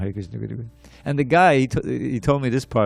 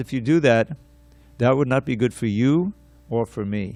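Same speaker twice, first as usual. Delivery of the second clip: put-on cool, very calm, unperturbed voice. Speaker retelling how an unperturbed man answered people threatening to take his money, very calm voice. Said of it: "he says it just like in that very calm voice".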